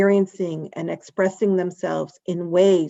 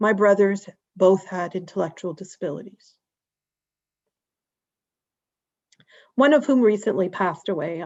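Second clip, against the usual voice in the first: heavy with emotion, voice catching and choking up. A speaker recounting childhood memories of their family, emotional. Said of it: "I apologize for getting emotional about this".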